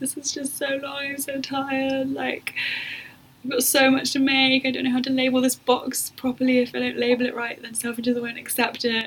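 play-acted tearful, high-pitched complaining voice. Retelling a late-night phone call to her dad: imitating her past crying.

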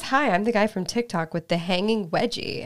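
ordinary delivery

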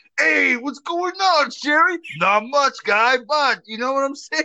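very high 1980s Bronx accent. Showing how they talk, like the Bronx in the 80s, in a 1980s Bronx accent. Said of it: "the only two that talk like this".

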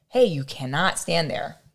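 ordinary talk

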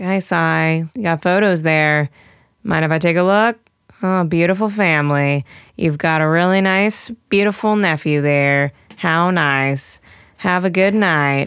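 mock flat bored monotone drone. Speaker acts out a film's diner waitress talking to a customer, imitating a monotone waitress. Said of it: "her monotone dialogue with him, where she's like".

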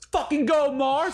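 shrill, very high cheering scream at full lungs. Retelling cheering on a player on stage: imitating a scream.

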